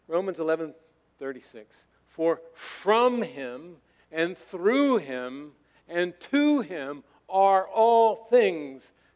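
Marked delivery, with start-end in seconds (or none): 2.1-8.9 heavy stress on from, through and to. Reading Romans 11:36 aloud as a model: stress on from, through, to. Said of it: "Emphasizing the words I just emphasized, the prepositions".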